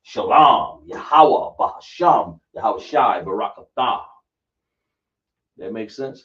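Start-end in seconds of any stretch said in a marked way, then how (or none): 0.2-4.0 loud, very slow, careful, deliberate delivery. Teaching how to say the words, showing the pace: slow, deliberate. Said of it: "you want to take your time".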